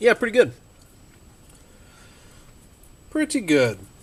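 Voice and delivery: talking with mouth full. Trying a barbecue chicken taco bite, talking while chewing. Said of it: "Excuse me for all the chewing".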